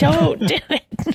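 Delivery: acted screaming voice. Describing watching the episode, the speaker retells screaming at the screen. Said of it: "I'm like screaming no at the screen".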